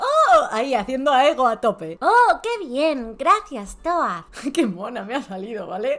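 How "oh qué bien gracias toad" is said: put-on high-pitched small child's little girl voice. Role-playing a birthday chat with toad, answer in a little girl voice. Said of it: "Voy a poner voz de niña pequeña".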